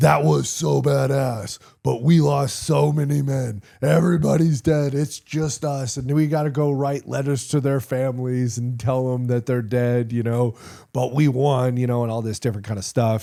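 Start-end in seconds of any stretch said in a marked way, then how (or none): 0.0-11.7 put-on mock-angry yelling, higher and louder. Retelling how Josh yelled at them on the roof: imitating Josh yelling in mock anger. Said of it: "yelling at us".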